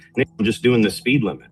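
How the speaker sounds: usual speaking voice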